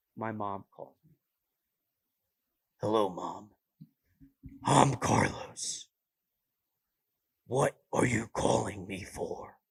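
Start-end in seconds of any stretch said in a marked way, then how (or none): 2.8-9.6 slow, loud, brooding dark superhero voice. Imagining answering his mom's call using the voice from his new movie. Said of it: "what if I use that voice".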